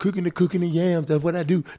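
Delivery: put-on young man's voice.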